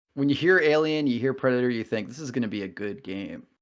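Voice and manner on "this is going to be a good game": mock heavy sarcasm, dry and sarcastic. Commenting on an upcoming game to another speaker: sarcastic. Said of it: "he says sarcastically".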